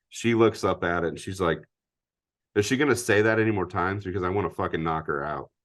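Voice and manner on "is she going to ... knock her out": ordinary talk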